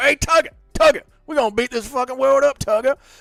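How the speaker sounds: very high war cry, ready to brawl. Asked for Russell Crowe fighting the whole world, doing a Russell Crowe impression. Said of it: "do an impression of Russell Crowe fighting the whole world".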